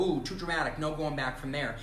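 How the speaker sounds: ordinary talk, nothing marked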